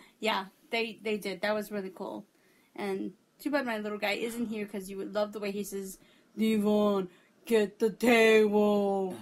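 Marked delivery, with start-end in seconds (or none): 6.4-9.2 deep voice, very slow and drawn out. Quoting how their little guy says it, in his deep voice. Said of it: "with his deep voice".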